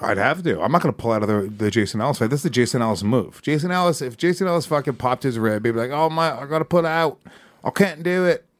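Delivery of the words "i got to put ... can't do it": put-on Australian accent, higher, much slower. Act out Jason Ellis pulling out of a fight with a popped rib, in Jason Ellis's Australian accent. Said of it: "That's my Australian".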